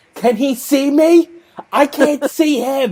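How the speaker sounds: shrill, very high, loud, drawn-out screaming. Retelling a CTO screaming in the middle of the office, imitating someone screaming. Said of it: "they're just screaming in the middle of the office".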